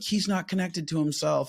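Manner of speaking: mock high-pitched, whiny, blaming, complaining voice.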